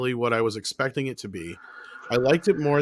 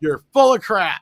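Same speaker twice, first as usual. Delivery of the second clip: mock very loud, very slow, booming dramatic reading; 7 semitones higher, 8 dB louder than usual. Repeating a viewer's comment on request: reading a comment with gusto. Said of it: "Say it again".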